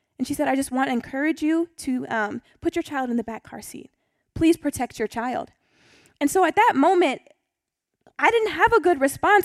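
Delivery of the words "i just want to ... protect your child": acted gentle, caring, kind, compassionate voice. Retelling how a youth pastor's wife spoke to a mother: imitating a kind, compassionate tone. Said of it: "in the most kind and compassionate way".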